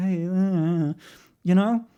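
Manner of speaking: very slow, lightly flirtatious voice. Showing how they talk in their personal life, a bit flirty. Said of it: "I at least go a bit more like flirty".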